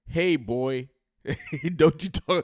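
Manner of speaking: loud, high-pitched scolding tone. Describing the vice president pointing a finger: imitating a scolding mom. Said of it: "like a mom that's talking to her five-year-old kid".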